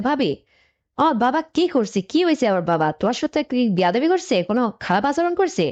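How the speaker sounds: usual speaking voice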